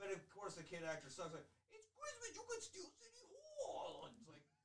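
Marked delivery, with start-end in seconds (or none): 1.7-4.1 bad, cheap fake New York accent, very high. Mocking a kid actor's line in a Christmas movie: bad New York accent. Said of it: "shitty New York accent".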